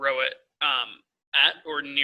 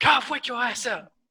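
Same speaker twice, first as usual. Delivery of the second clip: very high, shrill in-character yell; 9 semitones higher than usual. Yelling at a sleeping character to wake up: yelling in character.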